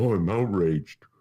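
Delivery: sarcastic, mocking put-on cartoon donkey voice. Mocking people who claim outrage: Eeyore voice. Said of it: "sound like Eeyore from Winnie the Pooh".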